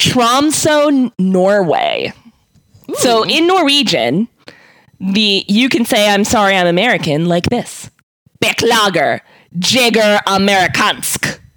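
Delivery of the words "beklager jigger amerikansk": hard-edged, combative, aggressive, forceful delivery. Demonstrating how to say an apology in norwegian, aggressive delivery. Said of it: "Why is it so aggressive?".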